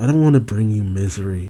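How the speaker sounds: ordinary delivery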